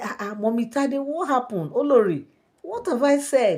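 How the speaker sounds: put-on high, surprised girl's voice, protesting tone.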